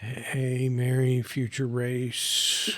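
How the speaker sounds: muttering quietly under breath. Tending an unconscious companion and praying in character: muttering under breath. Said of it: "I'm muttering under my breath".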